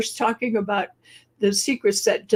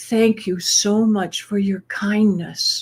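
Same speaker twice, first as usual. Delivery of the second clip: put-on soft whisper. Retelling thanking a kind lady at the cash machine: retelling a whisper. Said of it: "I kind of whispered".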